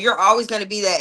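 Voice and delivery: ordinary talk, nothing marked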